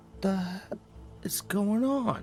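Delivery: freaked out. Narrating a role-playing game scene, voicing a character's line, freaked out. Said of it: "he visibly gets a little freaked out".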